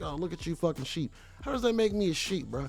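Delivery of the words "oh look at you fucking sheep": mock smug, smirking sneer. Retelling how a maskless person looks at others: imitating a smirking person. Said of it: "look around the room with, like, a smirk".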